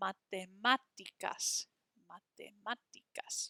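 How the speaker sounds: stress on accented má in matemáticas. Showing learners how the accented syllable sounds: stress on accented A in Matemáticas. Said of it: "Hear how that A with the accent mark is a little bit stronger".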